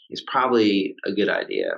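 normal talking voice

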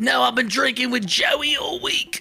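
very high, broad-stroke, put-on Australian accent. Joking about kangaroos in Australia, the speaker puts on an Australian accent. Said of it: "I don't know if that was a good Australian accent".

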